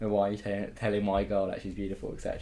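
usual speaking voice

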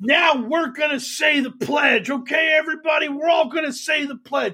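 put-on, high, frenzied screaming yell. Retelling how Michael Flynn led a crowd in the pledge: imitating Michael Flynn yelling. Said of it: "as he's screaming and yelling about it".

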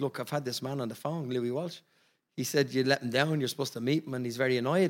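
ordinary talk, nothing marked

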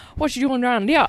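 imitated French Canadian accent. Retelling someone's crazy impression of her mom, imitating French Canadian mom accent. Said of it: "that crazy impression of her French mom".

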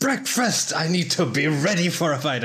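bursting yell at full volume, pitched high. Bursting in the door as a character: yelling at the top of lungs. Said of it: "yelling at the top of my lungs".

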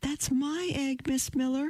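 very high, called-out little voice. A small girl in the first row waves her arms at miss miller: calling out. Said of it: "she called out".

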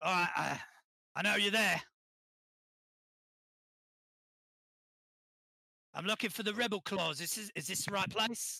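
put-on London Cockney accent in a character voice. Narrator voicing a stranger's voice heard by the players: Cockney accent. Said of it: "are we all doing Cockney accents?".

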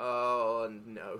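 numb, far-away, dazed, trance-like moan. Retelling sitting on a bus after putting the phone down: imitating own trance-like state. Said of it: "in a trance-like state for a minute, going".

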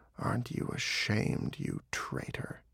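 restrained, embittered, hushed, whispered growl. A wounded fox looks the dog straight in the face, restrained, embittered growl. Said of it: "restrained and embittered, he growled".

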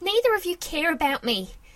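all-out yell, high, loud and swooping. Narrator reads Annie yelling at her parents after her father's order; yelling. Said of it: "Annie yelled".

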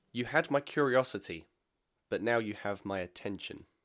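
plain

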